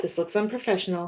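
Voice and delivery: ordinary talk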